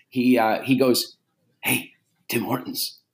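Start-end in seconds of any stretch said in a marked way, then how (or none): 1.6-2.9 little devil voice, quieter. Retelling a voice heard in the head while driving: little food devil voice. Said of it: "my little food devil, you know, ... he goes".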